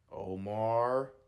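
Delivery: sassy, very loud, stretched-out, drawn-out name. Retelling how a referral coordinator said the speaker's name: imitating a sassy tone. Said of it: "Like that".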